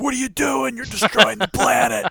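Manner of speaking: put-on high, accusing shout in children's voices. Retelling how kids at recess screamed at kids with styrofoam cups: imitating kids screaming. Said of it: "screaming at kids".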